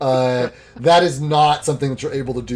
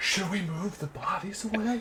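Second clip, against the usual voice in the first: high, very quiet, barely audible whisper; 8 semitones higher, 12 dB quieter than usual. Retelling asking the group a question, the speaker says it in a whisper.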